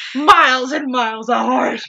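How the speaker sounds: loud, high-pitched, rousing coach yell.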